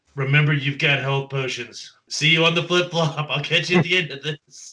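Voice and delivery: loud yelling, calling out. Calling out to another character at the end of a turn, yelling out. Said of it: "I yell out to Twig".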